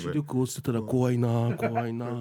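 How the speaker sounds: put-on creepy ghost-story teller voice. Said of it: "串川淳二だ".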